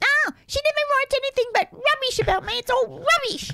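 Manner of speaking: high-pitched squeak. Retelling Ron's answer on hearing that a fan had phoned, imitating Ron's high-pitched squeak. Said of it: "in his high-pitched squeak".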